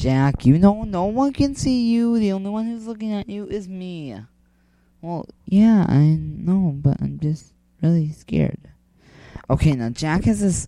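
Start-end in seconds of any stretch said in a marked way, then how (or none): 5.0-8.6 soft, soft-spoken delivery. Answering the only one looking at you, talking softly. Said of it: "I'm talking so soft".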